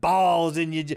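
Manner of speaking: imitated Southern accent. Retelling a kid's prank phone call line: imitating a Southern accent. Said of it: "like a fucking Southern accent".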